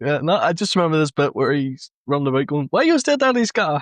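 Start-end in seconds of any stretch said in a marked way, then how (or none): 2.7-3.8 pitched-way-up robotic voice. Recalling a bit where he runs about, quoting it in a Chappie accent. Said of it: "I'm I'm doing a Chappie accent".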